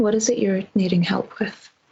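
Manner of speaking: very soft, hushed, quiet voice. Inquiring inside the hotel while trying not to cause a scene, speaking very quietly. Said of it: "I'm speaking very quietly at this point".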